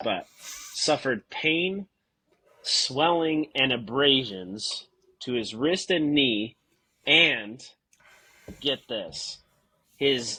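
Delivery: slow delivery, straight face, suppressed laughter. Reading out the officer's injuries to another speaker, fighting back laughter.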